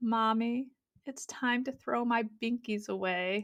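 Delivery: soft, downcast, sad, sorry-sounding voice. A mother retells what her daughter told her at the mirror: imitating a sad voice. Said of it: "said in the kind of sad voice".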